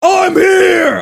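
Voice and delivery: high-pitched, booming, shouted yell. Telling a story about taking over a skyscraper, speaker retells his yell. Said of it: "I yell that in there".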